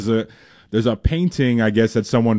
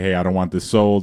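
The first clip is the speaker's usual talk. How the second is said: usual speaking voice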